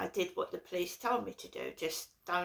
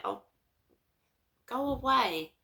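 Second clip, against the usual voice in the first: mock fed-up, exasperated, pitched-up, irritated dismissiveness; 5 semitones higher than usual. Retelling a reaction to a repeated buzzer: retelling an annoyed reaction. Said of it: "I'm getting pissed off again".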